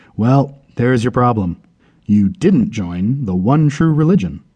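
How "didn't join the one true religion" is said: ordinary delivery, nothing marked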